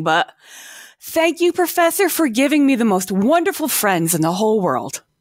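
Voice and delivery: tearful voice, fighting back tears. Thanking the Professor for friends made through the meetings, a speaker is holding back tears. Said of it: "I'm trying to say this without crying".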